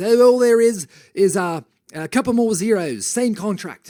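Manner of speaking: put-on unhurried British accent. Retelling what a man said once they sat down: British accent. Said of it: "he's got a, uh, a British accent".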